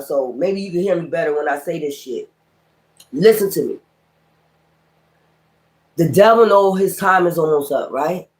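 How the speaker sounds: hushed whisper. Addressing listeners, choosing not to yell it this time: whispering. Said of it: "I'm a whisper this time".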